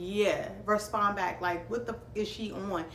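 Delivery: plain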